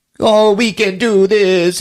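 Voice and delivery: put-on fake crying. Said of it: "mocking her, crying".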